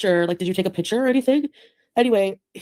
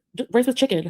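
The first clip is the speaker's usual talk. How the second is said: put-on grumpy, put-out, mildly angry tone; 3 semitones higher than usual. Retelling a partner's reply about what he ate at lunch: imitating an angry answer. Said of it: "he was kind of angry in his answer".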